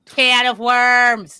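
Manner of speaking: put-on nasal Rochester accent. Podcast hosts joking around, one says a phrase in a nasal Rochester accent. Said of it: "we just went real nasal Rochester".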